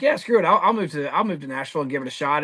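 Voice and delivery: ordinary talk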